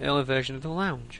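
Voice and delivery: ordinary talk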